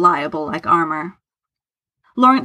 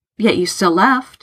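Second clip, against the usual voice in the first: usual speaking voice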